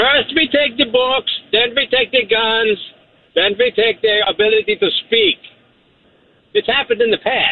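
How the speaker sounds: speaking with German accent. A call-in show caller, just greeted by the host, speaks in a German accent. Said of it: "are you doing a German accent?".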